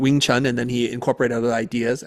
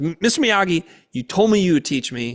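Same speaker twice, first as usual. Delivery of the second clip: angry, accusing outburst with raised pitch; 6 semitones higher than usual. Retelling a movie scene where the kid confronts his teacher: imitating an angry Daniel. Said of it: "He's so angry".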